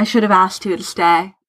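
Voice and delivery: ordinary talk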